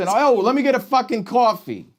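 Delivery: put-on New York pronunciation of "coffee". Doing a bit on how New Yorkers talk: New York accent on 'coffee'. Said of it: "That's how they say coffee and stuff".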